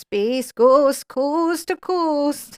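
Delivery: high, eerie, spooky haunted ghost voice. Joking about a ghost in a painting, in a haunted ghost voice. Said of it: "That's my haunted voice".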